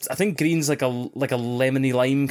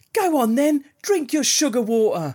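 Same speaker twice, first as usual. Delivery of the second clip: put-on, very high, poshest posh accent; 11 semitones higher than usual. Speaker imitates a young boy who piped up: imitating a very posh accent. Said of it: "he had like the poshest accent".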